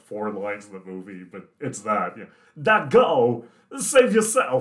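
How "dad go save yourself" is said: slow, high-pitched drawl. Quoting the son's line from the movie: Christopher Walken impression. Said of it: "Do you think you could do a Christopher Walken impression?".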